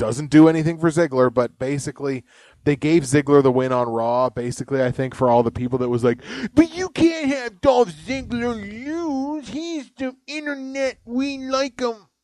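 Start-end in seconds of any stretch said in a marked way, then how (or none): 6.5-12.0 very high mocking voice, "lose" stretched out slowly. Mocking online fans who insist a wrestler must keep winning: impression of internet wrestling fans. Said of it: "that's my impression of internet fans".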